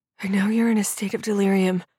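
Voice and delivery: whispering. Narrator voicing a woman whose hair is gripped by an angry man, whispered. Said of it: "she whispered against the tension on her scalp".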